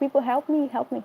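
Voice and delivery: mild, scared, held-back calling out. Retelling being hit at night and calling out: imitating own screaming for help. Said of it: "I started screaming".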